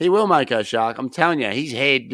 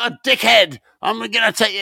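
put-on high-pitched, screaming, goading heckle; 9 semitones higher than usual. Retelling what another man kept screaming at someone, retelling a scream. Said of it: "He kept screaming like".

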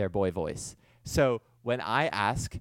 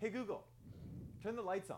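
high, soft hushed voice. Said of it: "So I would have to go".

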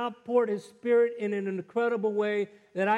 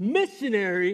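loud exclamation, projected for the whole room. Retelling what a man in a bank said for everyone to hear; retelling a loud exclamation. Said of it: "as loud for everyone in the bank to hear".

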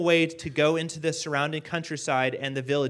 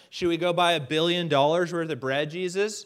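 ordinary delivery

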